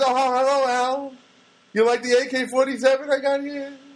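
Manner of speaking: put-on old man voice, high and slow.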